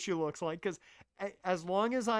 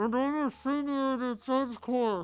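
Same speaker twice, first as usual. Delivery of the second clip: muffled, pitched-up voice, as if boxed in; 5 semitones higher than usual. Voicing a female character who is inside a box, muffled voice. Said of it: "I'm going to go the muffled voice".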